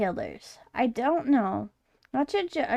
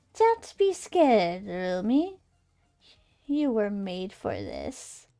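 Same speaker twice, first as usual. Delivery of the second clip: smooth, well-spoken, charming, slow sing-song voice; 2 semitones lower than usual. An entity speaks inside lumi's head in a charming, well-spoken voice. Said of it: "An entity, / Who is this behind a incredibly charming and well-spoken voice in your head?".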